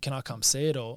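plain

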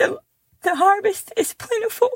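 high, tearful, emotional crying voice.

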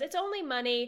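ordinary talk, nothing marked

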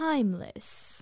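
timeless hit hard with heavy stress, well enunciated. Doing the other speaker's way of emphasizing a word: imitating emphasis on TIMELESS. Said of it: "Be me for a second".

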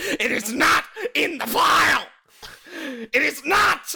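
acted, very high, very slow drawn-out yell. Retelling a movie scene where an actor yells at an uncooperative woman: George C. Scott yelling. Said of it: "he slams his fist on the desk and he goes".

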